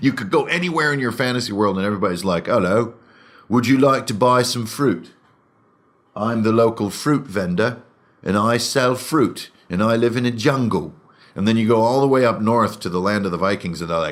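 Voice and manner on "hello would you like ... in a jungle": British accent with medieval-style intonation. Showing how everybody in a fantasy world talks, British accent with medieval intonation. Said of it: "a version of a British accent with uh, medieval intonation".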